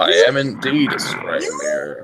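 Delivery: put-on deep, old-fashioned oracle-style magic mirror voice. Voicing a scrying mirror answering a question put to it, booming. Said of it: "you hear this kind of booming voice kind of speaketh".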